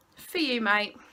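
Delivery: ordinary talk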